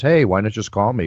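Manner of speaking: ordinary talk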